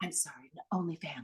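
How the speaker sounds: very quiet, hushed, low, officious voice. Speaker recalling the rehearsed line as the officious nurse: hushed tone. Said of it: "This kind of sort of hushed tone".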